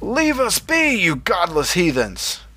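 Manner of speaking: high bellow with pitch swooping widely. Reading a story where a man confronts the floating woman Drifter: bellowing. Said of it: "he bellowed".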